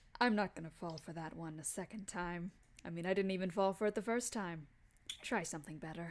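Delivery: speaking down low. Retelling a fight, voicing the sword-wielding opponent's reply: low voice. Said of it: "in like this low voice he goes".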